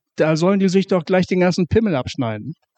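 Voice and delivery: normal talking voice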